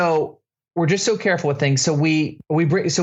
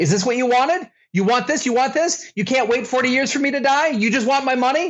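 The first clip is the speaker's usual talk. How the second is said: put-on, high, repeated full-on screaming; 8 semitones higher than usual. Recounting the fight where the money got thrown in his face, retelling a scream. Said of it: "And so I just started screaming".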